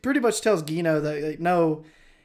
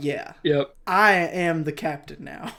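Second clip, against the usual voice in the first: plain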